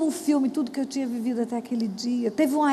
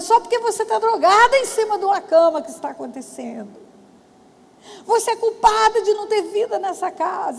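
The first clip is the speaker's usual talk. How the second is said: shrill, loud screaming; 6 semitones higher, 5 dB louder than usual. Retelling what she screamed at her mother: imitating herself screaming. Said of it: "Porque eu gritava".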